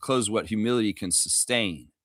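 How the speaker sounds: ordinary delivery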